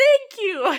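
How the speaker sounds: proud, effusive gushing.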